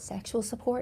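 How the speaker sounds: whispered, hushed. A tarot reader explaining a card, dropping into a whisper: whispered. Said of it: "I don't know why I had to whisper that".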